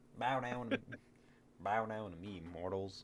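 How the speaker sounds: put-on soft, menacing, threatening rural Southern country accent. Performing a villain threatening mortals, threatening in a hick accent. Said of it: "threatening mortals with that hick accent".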